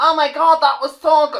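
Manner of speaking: gushing, effusive tone, very high and very loud. Imitating Aisha Tyler praising every new game: Aisha Tyler impression. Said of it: "That's my Aisha Tyler".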